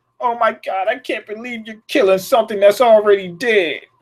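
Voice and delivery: put-on crying voice. Retelling a TV scene where Travis cries over killing walkers: imitating Travis crying. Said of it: "And he really starts crying".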